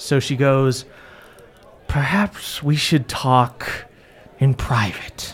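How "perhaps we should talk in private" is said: slack-jawed, half-open-mouth voice, lips never closing. Voicing the queen character, talking as if her mouth can't fully close. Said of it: "like she can't ever fully close her mouth".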